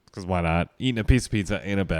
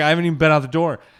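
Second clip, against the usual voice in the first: flustered, frantic, high panicked blurt; 8 semitones higher, 6 dB louder than usual. Retelling losing the cat in a hotel room: imitating own panic. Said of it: "I'm just panicking".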